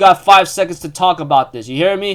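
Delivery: ordinary talk, nothing marked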